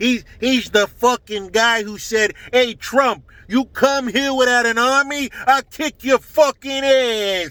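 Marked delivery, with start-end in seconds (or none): 2.5-7.5 threatening tone with ass drawn out at end. Quoting a politician's threat to Trump, saying it the way he would: Andrew Cuomo voice. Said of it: "let me say it how Cuomo would say it".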